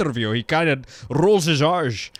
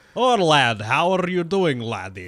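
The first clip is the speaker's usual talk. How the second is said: put-on Scottish accent, laid on full. Retelling a professor doing lab testing who talks like Sean Connery: Sean Connery Scottish accent. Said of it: "he straight up is just speaking like full like Sean Connery".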